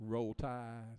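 put-on rural Alabama accent. Joking with an audience member in an Alabama hat: put-on redneck Alabama talk. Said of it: "You have to talk redneck for Alabama people".

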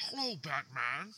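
barely-there villain murmur, very hushed. After admitting they can't really do Bane, a speaker tries it: Bane impression. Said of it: "That was the Bane hello".

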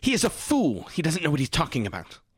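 very angry, high, swooping, furious outburst. Voicing an angry character insulting the man who gave the orders: character speaking very angrily. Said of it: "she is very angry".

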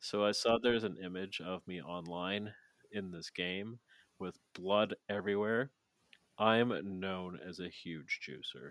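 soft, totally unbothered, nonchalant impression voice. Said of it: "he's so nonchalant".

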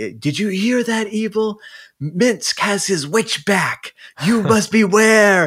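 very high, shrill, mock hollered yell. Retelling a story, the speaker acts out Minsk yelling at Evil: imitating Minsk yelling. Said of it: "He starts yelling. He's like".

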